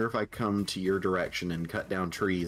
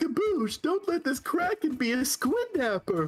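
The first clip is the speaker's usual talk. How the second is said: put-on clown voice. Showing off a practiced impression of the clown Chuckles: Chuckles impression. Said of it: "So I got my Chuckles impression down".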